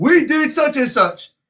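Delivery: mock screaming at the top of the lungs, high. Acting out someone on a mountain top: acted-out screaming at top of lungs. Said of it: "screaming at the top of your lungs".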